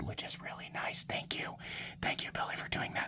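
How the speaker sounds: very quiet, hushed whisper, barely voiced. Thanking someone for helping while showing a lock bar, whispering. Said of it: "I don't know why I'm whispering".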